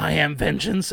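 dark vigilante hero voice, done only halfway. Retelling a line from the new trailer, imitating Batman sounding high. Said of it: "he sounds that high".

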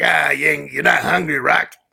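put-on loud, gruff, rough old man voice, barked. Recounting the Rocky story, the speaker quotes the old trainer, gruff Mick voice. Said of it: "He's a gruff voice".

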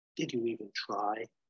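gently spoken, soft, quiet, hushed voice. Retelling a tv scene, one character speaks to another after guards burst in: softly spoken. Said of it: "McGee softly says".

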